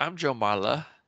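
put-on English accent. Imitating how Joe Marler says his own name: Joe Marler impression. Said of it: "he doesn't even say Joe Marler. It's like".

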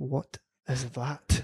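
put-on comic New Zealand accent. Retelling a spouse's reaction to an entry essay: funny Kiwi accent. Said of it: "Obviously in a funny Kiwi accent".

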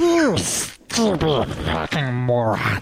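fantasy cave creature character voice. Reading a written comment aloud on the show, in a Smeagol voice. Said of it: "read Alex's small comment here in like a Smeagol voice".

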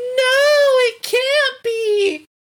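acted, very high, anguished, devastated shriek, drawn out. Retelling a scene where Fred sees the monster, imitating Fred's devastated scream. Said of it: "he was like screaming no".

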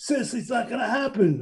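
half-hearted, mild holler. Retelling what he yelled at the track when his horse ran fourth: imitating someone yelling. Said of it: "he's yelling".

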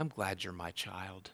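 put-on whisper. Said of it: "God whispers in your ear".

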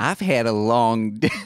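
put-on Southern accent drawl. In an improvised scene, a character greets a mailbox: southern drawl. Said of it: "southern drawl".

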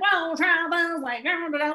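silly, goofy, high, loud put-on funny voice. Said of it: "I make funny voice".

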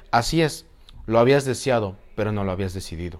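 ordinary delivery

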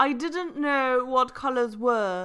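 British accent. Reading a passage aloud as requested: British accent. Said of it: "as read in a British accent. So you have to read in a British accent".

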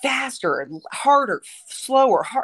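high, stretched-out screaming, acted out. A mother retells her son screaming in the shower; imitating someone screaming. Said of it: "he just starts screaming".

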